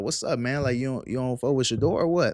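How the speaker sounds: ordinary talk, nothing marked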